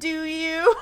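imitated sassy retort tone. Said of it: "he's like a sassy John Mulaney bit".

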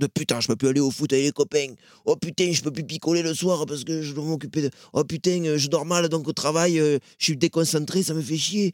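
coarse, gruff, boorish grumbling stock voice. Describing how some adults see parenting, speaker mimics a local cliché: gruff boor cliché voice. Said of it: "j'imite volontairement un cliché de gros bourru".

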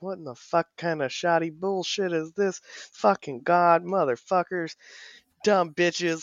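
mock grumbling, muttered under the breath. Acting out a grumpy man cursing to himself, imitating muttering under breath. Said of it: "he's just going off under his breath".

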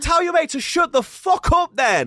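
ballistic, shrill, very high-pitched furious shout. Retelling shouting back at two girls in the gym, retelling going ballistic. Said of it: "I was going ballistic".

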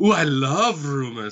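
bad acting with fake gusto. Showing how an actor delivers a favorite line, in a very bad Christoph Waltz impression, with panache. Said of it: "a very bad Christoph Waltz impression".

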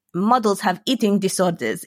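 put-on heavy Greek accent, laid on thick. Quoting what a woman always told them as a child, thick greek accent. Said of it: "in a Greek thick accent".

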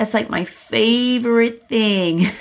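high, sing-song, lilting voice with vocal fry. Acting out a woman in a scene telling a man, lilting, high-pitched, fried voice. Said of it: "now lilting, high-pitched and fried".

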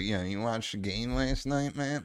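hoarse, rough, raspy voice. Acting out a junkie cutting off the reply: raspy junkie voice. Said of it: "it's like this".

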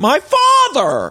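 put-on very high cracking man's yell. Recalling a christening fight, imitating Joe Gorga yelling. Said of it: "he was yelling".

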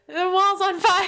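very high, very loud, shrill yell. Speaker recounting calling up the stairs to mom, retelling yelling up the stairs. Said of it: "I'm like yelling up the stairs".

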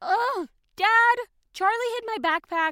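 fed-up, high, shrill yell. [name] calls to her dad at breakfast, yelling. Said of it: "[name], stop yelling".

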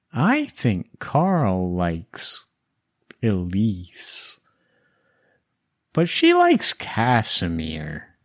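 put-on distant whisper in a child's voice. Game master voicing a girl heard inside one player's head, little Greta's distant whisper. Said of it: "the distant voice of little Greta whispering".

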